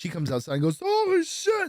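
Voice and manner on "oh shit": very high, totally freaked-out, alarmed exclamation. Retelling how Teresa reacted on coming outside to the dog, imitating Teresa freaked out. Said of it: "like she's all fucking freaked the fuck out".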